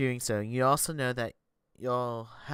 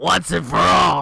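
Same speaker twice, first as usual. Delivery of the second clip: rough, loud, slow, creaky, drawn-out character voice; 4 semitones higher, 13 dB louder than usual. Voicing Grandma speaking into the player's ear: Grandma's voice. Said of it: "I get excited doing Grandma's voice".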